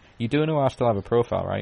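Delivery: put-on deadpan delivery. Speaker retelling what a woman turned and said to him, imitating a deadpan reply. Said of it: "in a deadpan face went".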